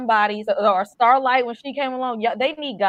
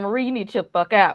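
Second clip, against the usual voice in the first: put-on dad voice, much lower, faster; 2 semitones lower than usual. Retelling what Polarity said to Marie, in a put-on dad voice. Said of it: "put on that dad voice and said".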